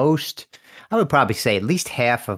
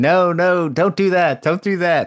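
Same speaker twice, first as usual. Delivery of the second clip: put-on, shrill, high, loud screaming; 9 semitones higher, 5 dB louder than usual. Retelling watching cops on tv as a lawyer: imitating own screaming at tv. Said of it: "I would be screaming".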